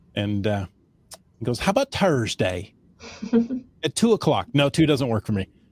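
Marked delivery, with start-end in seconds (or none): 1.5-4.4 thick, laid-on Irish brogue. Retelling a vendor's cold call, imitating his thick Irish accent. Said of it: "speaking in this thick Irish accent".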